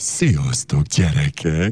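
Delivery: disguised put-on wolf voice. Children's show host becomes the wolf and greets the kids: wolf voice. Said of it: "elváltoztatom a hangomat".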